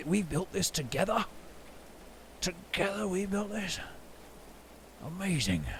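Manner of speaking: very quiet, hushed gruff mutter. Speaker imagining the listener looking around the main hall, gruff voice. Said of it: "You'll say to yourself in a gruff voice".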